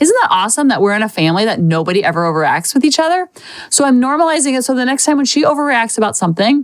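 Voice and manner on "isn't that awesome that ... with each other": usual speaking voice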